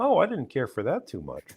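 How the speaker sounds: understated, mild, put-on bear voice. Describing how the Muppet bear in a suit talks: imitating an understated Muppet bear. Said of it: "he's always like".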